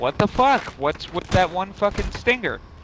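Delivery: high-pitched, baffled, bewildered outburst. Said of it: "I'm like".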